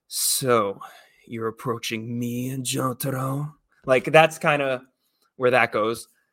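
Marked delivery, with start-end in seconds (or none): 0.1-3.5 swaggering, low, slow cocky vampire voice, bravado. Demonstrating voice choices for a vampire character, in a cocky vampire voice pitched low. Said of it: "talk down here like a vampire would".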